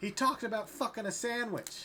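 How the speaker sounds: exclaiming at full volume, very loud and high. Voicing a tavern patron telling passersby something: very loud exclaiming. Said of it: "He's just very loudly exclaiming".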